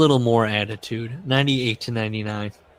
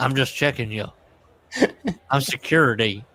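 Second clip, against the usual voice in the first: put-on Southern accent. Retelling a hidden camera show where a man poses as security: Vince's fake southern accent. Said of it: "he's doing a southern accent".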